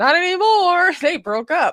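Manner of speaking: put-on Southern US accent. Host adds a quip after reading a politician's quote, in a put-on southern accent. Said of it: "How's my southern accent".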